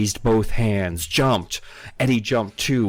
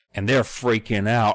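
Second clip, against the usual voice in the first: ordinary talk, nothing marked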